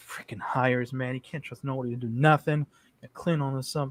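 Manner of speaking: very low, hushed mumble under the breath. A character who was just threatened shakes his head: mumbling to himself. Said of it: "And he starts mumbling to himself".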